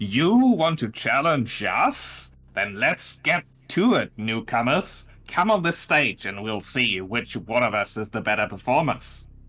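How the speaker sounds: harsh, screeching, challenging delivery. Narrator voicing a red folk challenging the newcomers, in a high-pitched screechy voice. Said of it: "speaks in a, a high pitched, uh, screechy voice".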